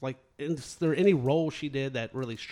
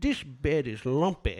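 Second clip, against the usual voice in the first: sudden put-on British accent. Recalling a scene from the movie Twins, the speaker quotes a character in a British accent. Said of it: "her character just breaks into a British accent and goes".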